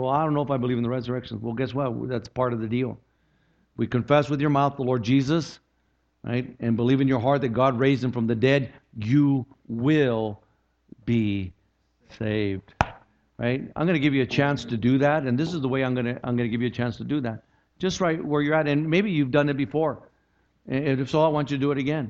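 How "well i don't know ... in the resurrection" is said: fast, doubting, skeptical tone. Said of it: "Some people".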